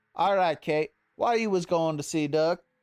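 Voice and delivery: put-on dead serious tone with Cajun accent. Voicing LeBlanc questioning Kate in a game: serious Cajun accent as LeBlanc. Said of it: "I should be talking LeBlanc in a serious Cajun accent now".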